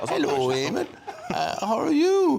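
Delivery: put-on Welsh accent, very high, swooping. Retelling meeting Catherine Zeta-Jones outside a cafe, her Welsh accent. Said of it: "And then Welsh accent".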